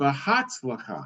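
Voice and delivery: behatzlacha with stress on third-last syllable hatz. Showing how english stress would fall: antepenultimate stress in behatzlacha. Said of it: "English is anti-penultimate, so it would be Behatzlacha".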